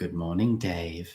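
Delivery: soft, curiously flat, level monotone. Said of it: "says in a curiously flat voice".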